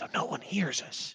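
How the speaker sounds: soft, low, hushed whisper, barely voiced. Answering why the figure whispers: whisper. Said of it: "Why are you whispering?".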